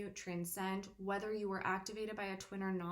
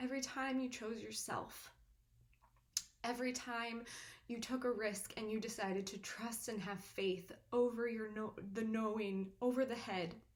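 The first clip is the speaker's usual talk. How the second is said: voice catching, choking up with emotion. Speaking to viewers about their unseen sacrifice, emotional, choking up. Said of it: "I'm sorry I'm getting emotional".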